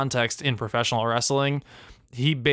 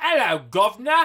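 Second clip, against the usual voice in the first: bad, over-the-top put-on British accent, very high; 10 semitones higher, 4 dB louder than usual. Mocking an accent that is hard to listen to, in a bad exaggerated British accent. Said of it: "It's basically like the equivalent of me just going".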